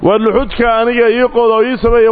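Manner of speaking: plain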